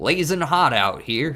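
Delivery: put-on pirate voice, loud, high, southern accent. Commenting on a game, joking in a southern pirate voice. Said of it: "that was a southern pirate".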